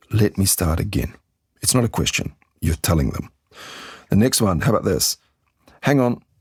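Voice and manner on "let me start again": pitch falls on the word again. Showing how to sound expert when stuck: falling pitch on 'again'. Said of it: "make the voice go down on again, not up".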